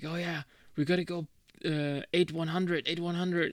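earnest, serious military commander voice. Retelling how a gamer commands his team in a war game: imitating serious military commander talk. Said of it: "talks like".

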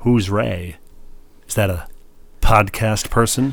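put-on scornful, dismissive, contemptuous sneer. Retelling how a woman reacted to a gift card addressed to Ray: mock contempt. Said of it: "with contempt".

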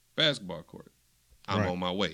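normal talking voice

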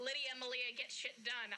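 ordinary talk, nothing marked

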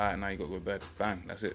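ordinary talk

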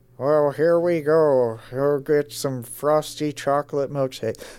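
put-on cartoon father voice. Recalling how a cartoon character first sounded, early Homer Simpson voice. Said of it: "the early Homer Simpson voice where it's just like".

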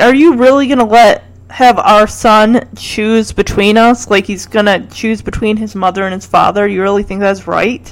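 normal talking voice

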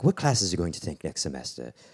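quaint English man's voice. Recalling a former Bach teacher talking to a student, quaint English man voice. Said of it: "he's just this quaint English man".

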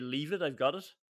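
ordinary talk, nothing marked

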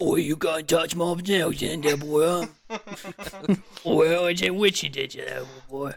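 put-on really grimy, rough, dirty British accent. Joke bit about bringing down the Snail Party, really dirty British accent. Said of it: "A really dirty British accent".

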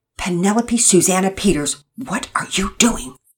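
hushed, severe, stern whisper. In the kitchen, calling someone by full name, a stern whisper. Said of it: "Mama Peters whispered sternly".

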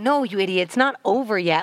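plain

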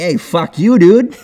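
loud, high, lousy, clumsy Boston accent. Showing a bad boston accent while talking about driving: bad boston accent. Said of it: "It's a shitty accent".

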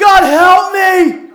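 very high, very loud, shrill pleading shout. Retelling a man falling while a bear attacks, shouting to God. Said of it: "he shouts to God".

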